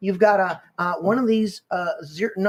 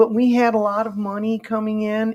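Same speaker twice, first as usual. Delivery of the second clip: slow, drawn-out cartoon frog puppet voice; 3 semitones higher than usual. Imitating Bill Gates talking about money coming in: Kermit the Frog voice. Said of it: "you gotta do like a Kermit the Frog".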